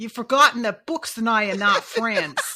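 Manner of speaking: put-on Brooklyn newsie accent. Trying out a voice for Sade: Brooklyn newsie voice for Sade. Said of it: "Like a kind of Brooklyn".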